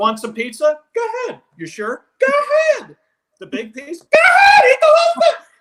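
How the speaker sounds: rising shout, very high and very loud. A performer showing how the voice changes offering food, pitch rising higher and higher. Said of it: "your voice gets higher and higher".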